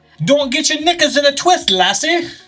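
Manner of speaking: put-on Irish accent. Asked to do the line one more time, trying it with an Irish accent. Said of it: "what's Irish?".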